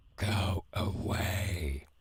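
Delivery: frightening, menacing voice. A voice behind a door answers a visitor's hello, in a scary voice. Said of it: "That is a very scary voice".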